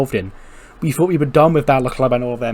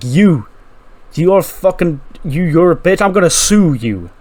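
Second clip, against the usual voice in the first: acted-out, seething, slow, pissed-off ranting outburst; 4 semitones higher than usual. Retelling a character storming into Big Mattress Inc: imitating pissed-off Cameron Grimes. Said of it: "Pissed off Cameron Grimes is storming through".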